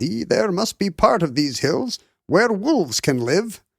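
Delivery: put-on weird high Scottish accent. Discussing the early conservation movement, voicing imagined pushback as John Muir in a weird Scottish accent. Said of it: "in a weird Scottish accent".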